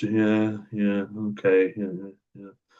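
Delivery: dull, lifeless, flat, dead monotone. Explaining anhedonia, acting out an anhedonic person, flat monotone. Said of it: "really flat, really monotone".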